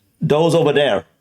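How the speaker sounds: rough, attempted Irish accent. Trying out how the phrase sounds: attempted Irish accent. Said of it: "I picture that coming from an Irish accent".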